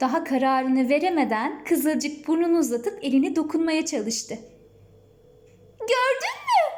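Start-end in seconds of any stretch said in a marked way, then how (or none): 5.8-6.8 very high, delighted, joyful little cry. Reading her line after the dog nuzzles her hand, joyful. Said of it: "dedi Ayşegül sevinçle".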